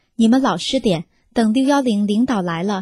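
ordinary delivery

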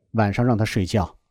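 ordinary talk

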